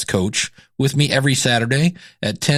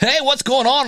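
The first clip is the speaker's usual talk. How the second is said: fake sports announcer voice, pitched up; 10 semitones higher than usual. Talking about how people sound on the mic, demonstrating a fake sports announcer voice. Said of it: "sound like a sports announcer".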